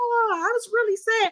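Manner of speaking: very high-pitched whine, slow and drawn-out. Mocking a reality-show player's claim about her tears: whiny Nicole Franzel impression. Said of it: "she's like".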